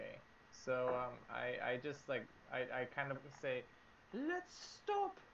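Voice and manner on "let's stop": very high-pitched put-on British accent. Speaking as a character during a tabletop game: british accent. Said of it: "that was actually more British".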